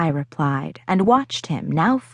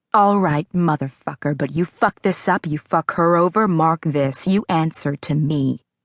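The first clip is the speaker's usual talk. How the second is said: low, held-down growl; 3 semitones lower than usual. A man sitting on a bed speaks into his phone: low growl. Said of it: "he growled low".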